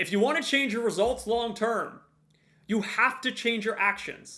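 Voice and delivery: loud projected voice. Speaking to a room, reaching the people in the back with a raised voice. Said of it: "I'm raising my voice to make sure that I reach the people in the back".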